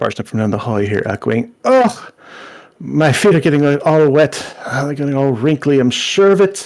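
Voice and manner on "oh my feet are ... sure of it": high loud grumbling voice. A game master voices a character echoing from down the hall, complaining voice. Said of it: "don't complain".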